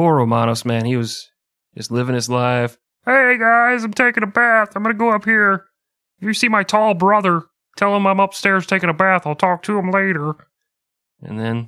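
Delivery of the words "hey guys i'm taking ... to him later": very high, silly comic voice pushed way up. Telling the story of Romanos, voicing him with a Ray Romano impression. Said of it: "this is my Ray Romano".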